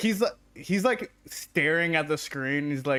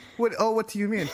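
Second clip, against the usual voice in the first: playing innocent, higher pitch; 7 semitones higher than usual. Voicing a character who smiles innocently when questioned: innocent tone. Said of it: "smiles innocently".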